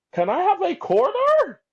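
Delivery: very high, loopy, crazy voice. Retelling a story where a strange-looking guy asks for a quarter: crazy voice. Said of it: "the guy has like a crazy voice".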